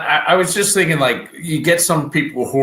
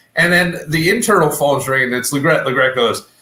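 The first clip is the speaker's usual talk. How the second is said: ordinary talk, nothing marked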